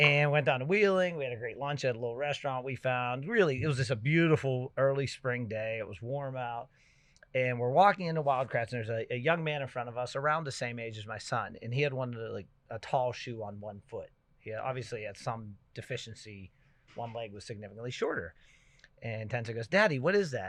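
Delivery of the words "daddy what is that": put-on high, loud, blurted childlike voice. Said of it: "he said it really loud".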